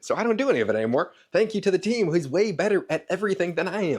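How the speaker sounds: very fast, barely breathing. Speaking to the audience after two coffees and an energy drink, talking very fast. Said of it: "I'm not even breathing because I'm talking so fast".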